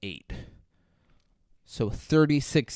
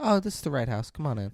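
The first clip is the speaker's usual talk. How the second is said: plain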